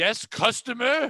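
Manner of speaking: mock, hollered, shouting voice. Retelling answering a woman screaming for a manager; retelling own yell. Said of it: "We're just yelling titles".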